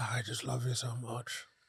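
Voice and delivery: drawn-out, slow, hushed half-whisper. Retelling how Littlefinger talked every time: imitating Littlefinger half-whispering. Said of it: "He's whispering".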